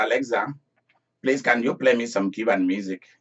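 ordinary delivery

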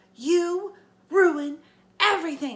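very high, shrill, very loud yell. A narrator reads a character's line, aimed at him after she marches over: yelled. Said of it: "she yelled at me".

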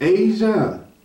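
mock honeyed, sweet motherly calling voice. Retelling how a mother calls her daughter: imitating a mother's sweet calling voice. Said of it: "the mother probably would call her with that sweet voice".

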